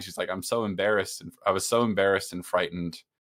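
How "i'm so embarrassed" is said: mock crying, sobbing. Retelling a film scene, quoting her line, imitating someone crying. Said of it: "And she's crying".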